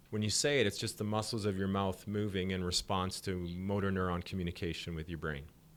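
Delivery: plain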